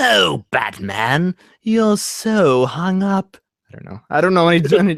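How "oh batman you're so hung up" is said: very slow, drawn-out supervillain voice. Answering a request for the Joker voice: Mark Hamill's Joker voice. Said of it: "so what's Mark Hamill's Joker voice?".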